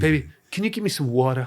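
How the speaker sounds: put-on Puerto Rican accent. Retelling a film scene where she argues a little with Woody Harrelson, in Rosie Perez's Puerto Rican accent. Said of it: "in her Puerto Rican accent".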